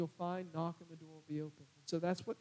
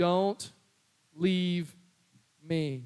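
put-on toddler voice, pleading, louder; 12 dB louder than usual. Retelling how a two-year-old grabbed his face: imitating a two-year-old's plea. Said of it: "he said it just like this".

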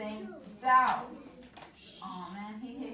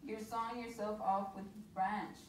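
ordinary delivery

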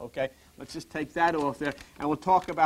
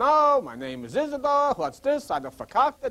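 animated, high, swooping put-on New York accent; 6 semitones higher than usual. Describing how someone from New York talks: put-on New York accent. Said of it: "lives up in New York and talks like this".

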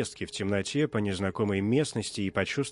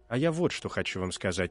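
usual speaking voice

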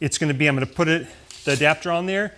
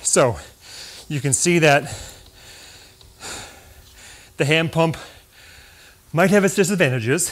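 out of breath, winded. Right after pumping by hand and checking the time, the speaker explains, winded. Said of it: "obviously I'm kind of winded".

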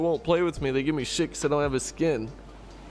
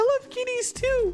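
put-on, very high, childlike little kid voice. Trying out a little kid voice one more time, put-on little kid voice. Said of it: "I think I'm gonna try the little kid voice one more time".

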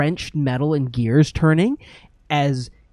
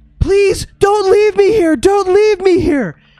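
very high, loud, ghostly, pleading screamed wail; 9 dB louder than usual. Voicing a ghostly face begging not to be left: ghostly visage yelling a plea. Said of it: "the visages say".

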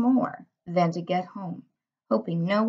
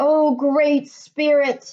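high, wailing, howling cry; 6 semitones higher, 3 dB louder than usual. Dog, huddled with the others facing their worst fear, speaks first, howling. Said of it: "he howled".

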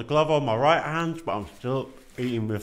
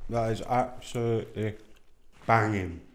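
chewing, talking with mouth full. Tasting food into the mic with a co-host, chewing, mouth full. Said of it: "I'm chewing to the mic".

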